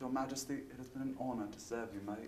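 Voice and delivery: attempted British accent. Given a line to try, the speaker addresses Her Majesty in a British accent. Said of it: "Can I try my British accent?".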